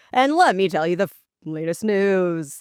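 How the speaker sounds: mock stuffy TV news anchor voice.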